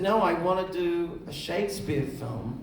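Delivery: ordinary delivery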